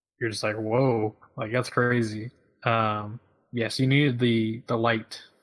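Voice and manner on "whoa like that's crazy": normal talking voice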